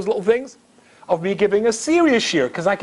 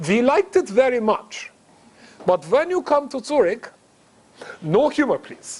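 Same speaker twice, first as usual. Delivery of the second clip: put-on speaking with a German accent; 3 semitones higher than usual. Speaker retells Mark's phone call from Zurich; imitating Mark's German accent. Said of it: "In this German accent".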